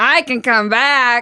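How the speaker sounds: very loud, high-pitched Boston accent with Boston vowels. Asked to try the phrase again, answering in a boston accent. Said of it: "That's perfect Boston accent".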